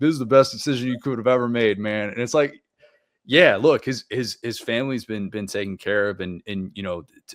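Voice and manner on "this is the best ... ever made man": put-on full-mouthed speech, higher. Retelling what a recruit's dad said while eating steak: imitating talking with mouth full. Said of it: "he's like got a mouthful of steak".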